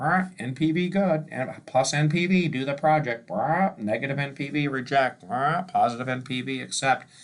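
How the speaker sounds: high, squawky parrot-like chatter. Speaker mocks the undergrad mindset about NPV, parrot impression. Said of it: "I'm going to do my parrot impression".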